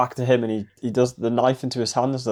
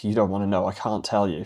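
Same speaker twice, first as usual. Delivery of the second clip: mock scared voice, lower and quieter; 4 semitones lower, 4 dB quieter than usual. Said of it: "he's acting all, like, scared".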